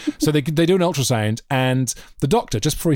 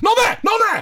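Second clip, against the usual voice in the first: put-on abrupt, very high-pitched cry of alarm; 4 dB louder than usual. Speaker recalls a man suddenly speaking up at a delicate moment, retelling a sudden outburst. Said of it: "he just suddenly went".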